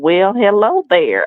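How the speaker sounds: put-on Southern accent, heavy drawl, laid on thick. Retelling an early morning phone call from a caller: imitating a southern drawl. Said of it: "he's got a real Southern drawl".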